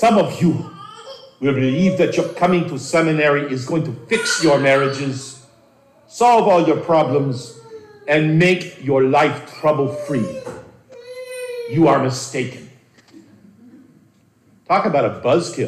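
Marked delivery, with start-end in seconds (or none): 0.0-12.7 put-on rich voice with Hungarian Hebrew accent. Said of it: "in this rich Hungarian Hebrew accent of his".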